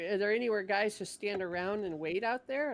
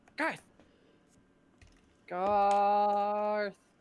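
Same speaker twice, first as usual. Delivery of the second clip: repeated drawn-out screaming of one word; 5 dB louder than usual. Waking a sleeping character by screaming in his ear: screaming a name. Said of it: "I scream in your ear".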